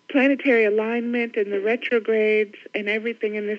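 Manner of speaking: ordinary delivery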